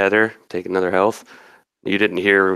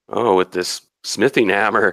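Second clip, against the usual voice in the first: plain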